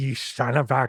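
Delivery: put-on Boston accent. Recalling how the promoter reacted to a prank question, [name]'s Boston accent. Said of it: "he'd do his little Boston accent".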